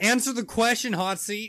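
loud, high demanding yell. Pressing another speaker to answer on the hot seat: yelling. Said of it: "I'm yelling".

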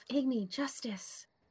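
very quiet mumble under the breath. Speaking as a character in the scene: mumbling to self. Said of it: "I'm gonna mumble to myself".

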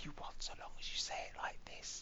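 hushed whisper. Demonstrating the style being described, whispering. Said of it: "It's all done in a whisper".

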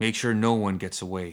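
usual speaking voice

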